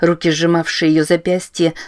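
ordinary delivery

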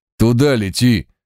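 sharp, urgent barked delivery. Aboard a diving aircraft, a man shouts an order again, shouted. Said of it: "вновь прокричал он".

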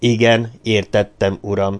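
ordinary delivery

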